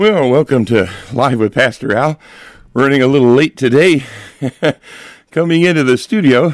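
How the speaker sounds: slightly winded, catching breath. Radio host opens the show after running late into the studio, a little out of breath. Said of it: "I'm a little out of breath".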